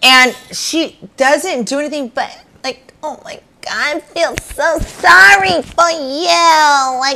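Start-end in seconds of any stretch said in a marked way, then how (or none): 3.0-7.0 high, slow mocking tone, "you" stretched and pitched up. Imitating how Gina talks: mocking impression of Gina's voice. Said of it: "that voice".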